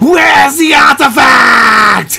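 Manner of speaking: shrill, very high, loud shouted cartoon character voice. Quoting a favourite line from a video, imitating a character's voice. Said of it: "I do some of the voices of that some of the characters in that video".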